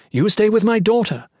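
yelling, pitched very high. Mirel calls out to Jaren, yelling. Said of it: "Mirel yelled".

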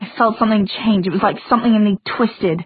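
ordinary delivery

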